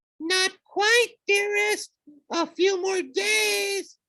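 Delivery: high falsetto, "days" drawn out. Narrator reads a character answering a monstrous voice, calling out in falsetto. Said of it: "He called out in falsetto".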